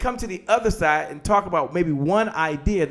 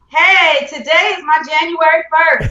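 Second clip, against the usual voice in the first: more energetic, higher and louder; 12 semitones higher, 11 dB louder than usual. Saying an affirmation again after being asked for more energy: more energy. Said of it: "A little more energy".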